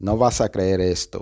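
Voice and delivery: ordinary talk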